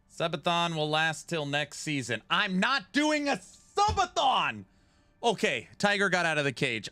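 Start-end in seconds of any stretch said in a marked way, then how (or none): 2.3-4.7 sudden, very high, drawn-out furious angry shout. Reacting to chat asking about a subathon: angry outburst. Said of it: "I don't know why I just got so angry".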